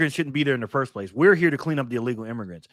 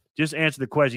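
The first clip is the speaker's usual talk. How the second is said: usual speaking voice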